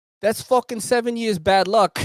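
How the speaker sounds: put-on heavy Brooklyn Italian accent, laid on thick. Retelling a police stop, quoting a girl who saw the umbrella opened; strong brooklyn italian accent. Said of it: "mad Brooklyn Italian accent as fuck".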